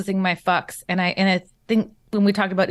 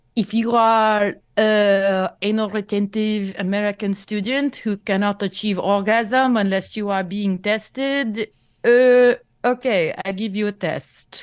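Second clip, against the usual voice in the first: put-on French accent. Quoting a man who offered tests to American students, imitating his French accent. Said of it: "I can't even do his accent anymore".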